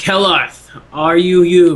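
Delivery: loud, high, booming dragon voice. Narrating a game, the speaker voices a dragon addressing a character, in a booming voice. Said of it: "he speaks out in a booming voice".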